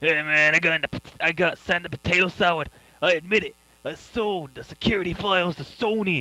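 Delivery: put-on high surfer-kid voice.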